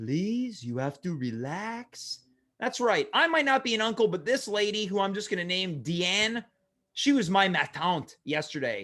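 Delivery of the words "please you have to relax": low, slow, comforting voice, relax stretched out. Retelling what a nurse said with hands on his shoulders, mimicking comforting French aunt voice. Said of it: "most comforting French aunt voice".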